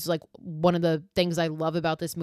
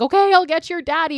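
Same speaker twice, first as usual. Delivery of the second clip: very high, loud, stressed-out, fed-up screech; 10 semitones higher, 6 dB louder than usual. Retelling a film scene where a frantic mother screams at her son: imitating a mother screaming. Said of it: "screams at him".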